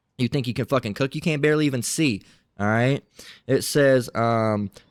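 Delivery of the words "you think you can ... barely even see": ordinary talk, nothing marked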